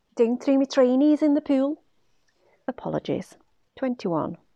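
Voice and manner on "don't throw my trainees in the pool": loud, high-pitched Liverpool Scouse accent. Explaining how to perfect a Scouse accent, the speaker demonstrates a Scouse accent. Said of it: "the best way to perfect a Scouse accent".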